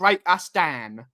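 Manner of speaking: put-on Cockney accent laid on full, broad. Imitating what they'll say during the game: full cockney accent. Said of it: "They'll go full cockney".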